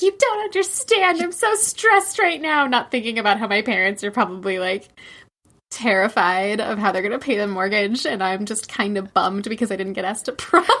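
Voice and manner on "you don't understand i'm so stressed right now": put-on shrill teenage scream, pitched very high. Retelling screaming at parents as a teenager: imitating a teen screaming. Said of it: "Just screaming at my parents".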